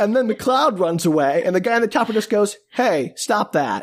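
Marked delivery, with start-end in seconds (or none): 2.7-3.8 deadpan, dead dry, no fuss. Retelling a movie scene, quoting the helicopter guy: imitating a deadpan voice. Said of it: "in that exact deadpan voice".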